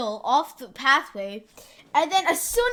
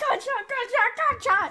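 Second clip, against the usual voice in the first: mock scream, much higher pitched; 9 semitones higher than usual. Retelling how someone walked in after a gunshot, retelling a scream. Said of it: "And he's like screaming".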